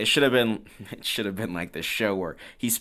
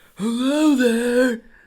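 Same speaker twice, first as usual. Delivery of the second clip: put-on loud, high-pitched old voice; 8 dB louder than usual. Describing a film's old mafia boss who sounds like Kami, in a Kami voice. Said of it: "He has like the same voice as Kami".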